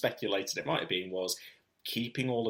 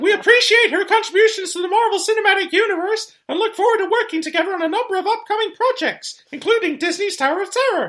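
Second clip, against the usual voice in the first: squealed out high and loud; 14 dB louder than usual. Reading out the Disney statement as Mickey, after being asked to do the voice: Mickey Mouse voice. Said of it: "But Mickey was reading it for him".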